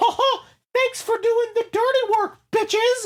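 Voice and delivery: very high-pitched cartoon mouse voice. Telling a made-up movie ending, voicing the villain: Mickey Mouse voice. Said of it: "it's fucking Mickey goddamn Mouse".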